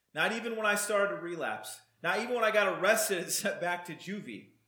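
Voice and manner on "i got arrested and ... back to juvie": ordinary talk, nothing marked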